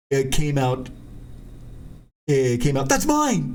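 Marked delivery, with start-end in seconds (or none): 2.9-3.5 very high, grabby, possessive outburst. Retelling own reaction on seeing the print: imitating a possessive exclaim. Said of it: "very possessively".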